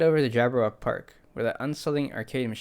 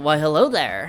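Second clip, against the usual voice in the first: nasal voice, higher and louder; 5 semitones higher, 8 dB louder than usual. Trying out a character's greeting line in a more nasally voice. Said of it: "Wasn't I doing like a more nasally voice?".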